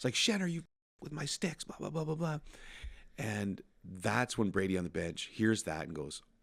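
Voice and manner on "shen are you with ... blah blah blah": play-acted, very high-pitched, shrill screaming outburst. Retelling a hockey story where Giroux screams at a teammate: imitating Giroux screaming. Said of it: "he starts screaming at Shen".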